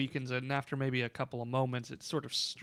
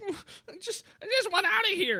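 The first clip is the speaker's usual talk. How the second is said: very high, whiny little goblin voice. Voicing a goblin who pats his own head: voicing a goblin. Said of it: "And one of them is kinda, like, patting his own head".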